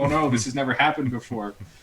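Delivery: mock flustered, panicky alarm. Imitating another player's character waking to an alarm: imitating someone panicking. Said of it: "your guy was kind of panicking".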